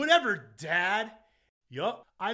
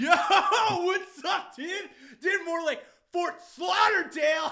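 very high, put-on drunk, wasted-sounding voice; 11 semitones higher, 3 dB louder than usual. Playing a spring break correspondent asked how it's going: acting drunk. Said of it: "you sound a little wasted".

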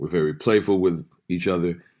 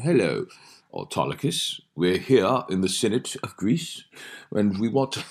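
put-on British stage-actor voice, West London accent; 3 semitones higher than usual. Recounting a running joke about ancient-world films, mocking british actors in antiquity. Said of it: "making fun of British actors doing antiquity".

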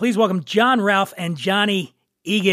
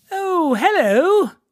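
very high, fake put-on British accent; 10 semitones higher than usual. Opening the show with a greeting: put-on British accent. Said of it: "That's my British accent".

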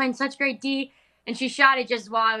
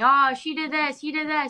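mock screaming in a child-like voice; 5 semitones higher than usual. Describing coming in from the backyard to tell on each other, imitating kids screaming.

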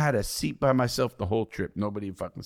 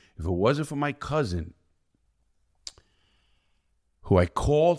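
voice welling with emotion, pitched up; 5 semitones higher than usual. Telling how their cousin helped them after crying on the bus, getting emotional. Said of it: "I'm getting emotional".

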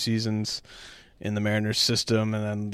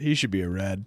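mock deadpan delivery, lower pitched; 2 semitones lower than usual. Retelling a remark made while watching Friday night's game, in mock deadpan. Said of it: "very sort of deadpan just says".

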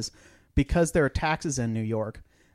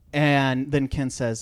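ordinary delivery

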